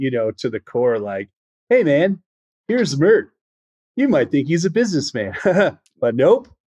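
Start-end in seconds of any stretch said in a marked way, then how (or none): 1.7-6.4 laid-back put-on SoCal voice, pitched up, easy. Doing a more accurate impression of the narrator: laid back SoCal Bruce Brown impression. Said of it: "laid back SoCal".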